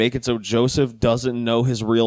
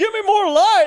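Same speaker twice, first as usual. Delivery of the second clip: put-on, very high-pitched shout; 4 dB louder than usual. Recapping a scene where a man works on an engine, imitating Hank shouting. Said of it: "And he's like shouting".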